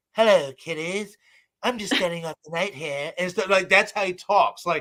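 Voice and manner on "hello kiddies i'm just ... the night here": spooky, ghoulish horror-show host voice. Showing exactly how a character you grew up watching talks, do the Crypt Keeper voice. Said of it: "this is exactly how he sounds".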